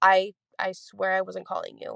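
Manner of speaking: ordinary talk, nothing marked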